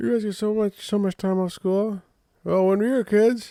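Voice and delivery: very high, gummy, toothless voice. Quoting the things their mom always used to say, in a toothless imitation of mom. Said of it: "John sounds toothless".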